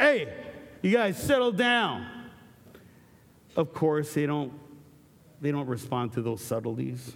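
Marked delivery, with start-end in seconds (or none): 0.0-2.1 mock boisterous yell, much higher and louder. Speaker retells yelling from the back at noisy kids, retelling a boisterous yell. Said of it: "I've got this really boisterous voice".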